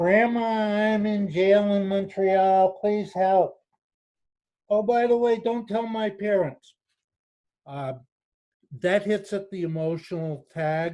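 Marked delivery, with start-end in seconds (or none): 0.0-6.7 muffled, indistinct, pitched-up phone-like voice. Explaining the grandparent scam, the speaker acts out the scam caller: muffled voice. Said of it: "usually a muffled voice, something like this".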